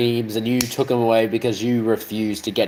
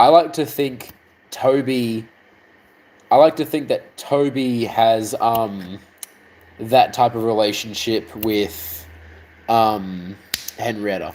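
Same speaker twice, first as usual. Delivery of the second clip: slow, deliberate, distracted musing aloud. Speaker shares a theory about two characters' relationship, talking slowly. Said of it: "Why am I talking so slow?".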